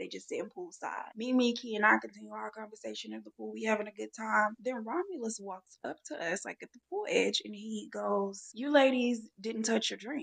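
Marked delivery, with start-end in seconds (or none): 8.5-10.2 grave, stern, raised, very serious, no-nonsense tone. Retelling what someone said at the pool edge: imitating a very serious tone. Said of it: "He says it in a very serious tone".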